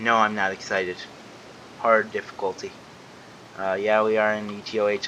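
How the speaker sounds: ordinary delivery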